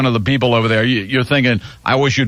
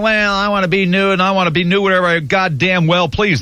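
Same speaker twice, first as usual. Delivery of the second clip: sarcastic, mocking parroting; 7 semitones higher than usual. Throwing the caller's view back at him: mocking imitation of the caller. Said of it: "you're saying".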